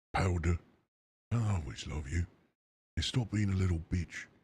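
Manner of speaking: slightly posh put-on voice. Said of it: "He's gotta be a bit more posh".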